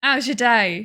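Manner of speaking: put-on English-speaker chatter. Joking that the English can't speak English: imitating English speakers. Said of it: "We're all like".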